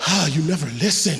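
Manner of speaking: muttered under breath. Retelling an argument during worship: imitating a mumble under breath. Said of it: "I can hear her mumble under her breath".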